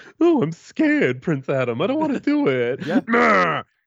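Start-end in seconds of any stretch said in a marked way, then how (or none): 0.2-2.9 frightened, timid cartoon cat voice. Discussing cartoons, a speaker acts out the cat's line in a mock-scared Alan Oppenheimer voice. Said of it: "imagine Alan Oppenheimer doing those voices".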